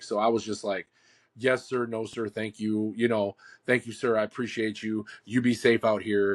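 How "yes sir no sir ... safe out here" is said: imitated nervous and polite manner of speaking. Retelling own replies to a man in uniform: imitating own nervous politeness. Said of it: "I'm freaking the hell out".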